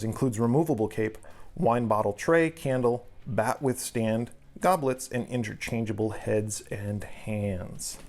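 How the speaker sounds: ordinary talk, nothing marked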